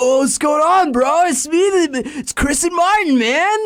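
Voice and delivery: put-on very high, slow, drawn-out California dude accent. Imitating the Kratt brothers' speech: imitating the Kratt brothers' California accent. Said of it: "they have an accent like they are from California".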